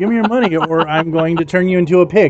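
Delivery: ordinary delivery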